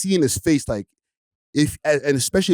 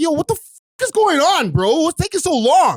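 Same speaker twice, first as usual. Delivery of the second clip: acted, very high, impatient yell; 13 semitones higher, 4 dB louder than usual. Stuck in a slow drive-through lineup, retelling a yell out the window. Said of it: "And then I yell out the window".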